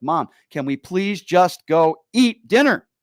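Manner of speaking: angry, loud, rising, drawn-out furious pleading. Retelling a long errand that made dinner late: imitating own furious plea. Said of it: "I am furious".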